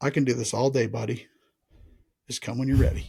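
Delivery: whispering, pitch dropped. Retelling what the speaker told themself while waiting for him to move, whispering to oneself. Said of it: "I literally said in a whisper to myself".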